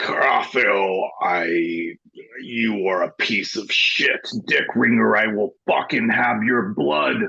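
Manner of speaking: animated character voice, building up. Narrating a game scene, voicing Gladwin as he talks, voice getting deeper and deeper. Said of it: "his voice gets deeper and deeper".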